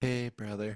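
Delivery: muted, held-back, very quiet and low voice. Greeting the show's host over a faulty mic: speaking very quietly. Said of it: "I tried to do it real quiet".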